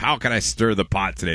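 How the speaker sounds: ordinary talk, nothing marked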